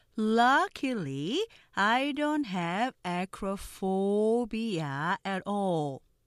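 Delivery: very slow, careful, word-by-word read-aloud. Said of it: "느린 속도 발음 듣고 천천히 따라해".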